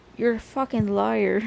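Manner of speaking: put-on Irish accent. Retelling a scuffle, the speaker quotes what someone yelled, in an irish accent. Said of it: "adopt this Irish accent?".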